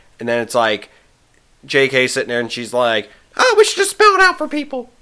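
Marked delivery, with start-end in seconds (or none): 3.4-4.8 very high, half-hearted, loose cartoon mouse voice. Imagining a writer speaking up in the movie's writers' room, in a vague Mickey Mouse voice. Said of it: "doing my vague Mickey Mouse voice".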